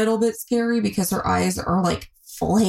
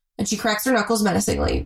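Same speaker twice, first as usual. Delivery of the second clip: plain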